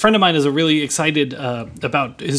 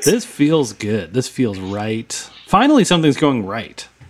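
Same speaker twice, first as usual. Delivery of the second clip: sarcastic, lower; 4 semitones lower than usual. Reacting to the Great Debates starting again, in a sarcastic tone. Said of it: "You said that in the tone of, like, a sarcastic".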